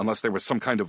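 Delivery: ordinary delivery, nothing marked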